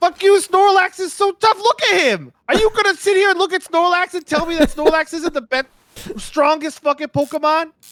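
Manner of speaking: put-on extremely thick New Jersey accent, high-pitched. Retelling a friend arguing with his friends about Snorlax, extremely heavy Jersey accent. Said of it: "extremely heavy Jersey accent".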